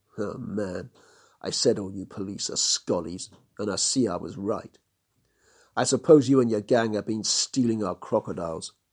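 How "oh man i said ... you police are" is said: ordinary delivery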